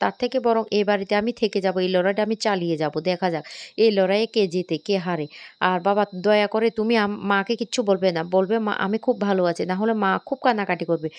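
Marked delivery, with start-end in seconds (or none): none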